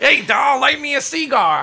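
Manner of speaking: very high, loud, swooping cartoon baby voice. Describing a doll that talks like a cartoon baby, the speaker voices it: Roger Rabbit baby voice. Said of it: "talks like the fucking... Baby and Roger Rabbit".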